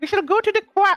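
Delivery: playful, put-on high-pitched voice. Speaker answering someone asking whether they are going to the car, high-pitched voice. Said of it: "I'm just doing a high pitched voice".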